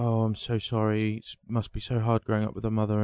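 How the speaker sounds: usual speaking voice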